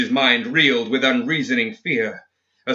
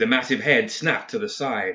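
ordinary delivery

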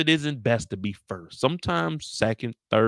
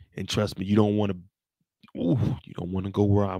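whispered, lower; 4 semitones lower, 3 dB quieter than usual. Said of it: "why are you whispering?".

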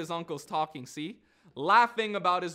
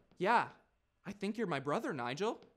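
put-on posh little kid voice, quieter; 7 dB quieter than usual. Retelling a kid named Karim claiming to be his brother, in a posh little voice. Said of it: "He's got this posh little voice".

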